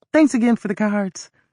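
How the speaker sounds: words run together. Reading a story aloud, voicing the narrator's line: very fast speech. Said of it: "speaking so fast it sounded like one long word".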